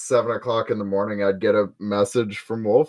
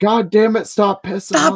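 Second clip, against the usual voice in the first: put-on yell, higher pitch; 11 semitones higher, 3 dB louder than usual. Retelling how the other speaker yelled at the dogs: imitating someone yelling. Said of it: "And then you yelling".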